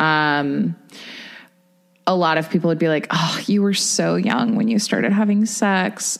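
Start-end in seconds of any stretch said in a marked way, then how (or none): 3.1-6.2 imitated sad, pitying voice. Mimicking what many people say to the speaker: imitating a sad pitying voice. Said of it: "don't don't like make that sad voice at me".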